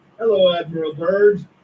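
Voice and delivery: put-on German-accented voice. Retelling a message that came over the wire to admiral byrd, german accent. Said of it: "with a German accent".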